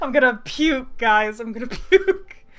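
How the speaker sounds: loud, laughing, overwhelmed, fake-queasy wail.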